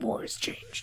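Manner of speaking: hushed, breathy, half-whispered voice. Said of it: "Maybe you'd have a better voice".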